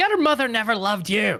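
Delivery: put-on yelling. Voicing a character who taunts the villain: shouting an insult in character. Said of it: "just shout out".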